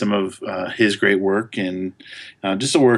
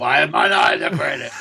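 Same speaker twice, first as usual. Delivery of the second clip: rough, creaky character voice; 7 semitones higher than usual. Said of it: "did Harvey Fierstein do something".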